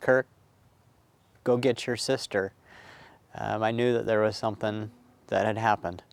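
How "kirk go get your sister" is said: tearful, broken voice breaking up while crying. Retelling his crying mother telling him to get his sister, imitating a broken voice. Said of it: "from her broken voice of saying".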